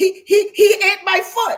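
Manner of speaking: acted stammering scream, high and drawn out. Describing someone who lost a foot to a lion: imitating someone screaming. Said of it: "Then you screaming".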